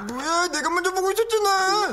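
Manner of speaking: very high-pitched, mocking copycat voice. Repeating the other speaker's complaint back at them: mockingly copying the other speaker. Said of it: "따라하지 마".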